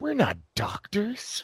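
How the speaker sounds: dry, quiet, straight-faced, understated delivery. Recounting a comedy scene, one actor facing his partner, deadpan Dan Aykroyd impression. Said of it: "just deadpan".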